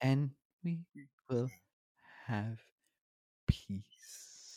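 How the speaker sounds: soft, calm, soothing, very slow and drawn out. Imitating how Palpatine calms down on a line: soft calm Palpatine voice. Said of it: "calms down and gets so, like, soft".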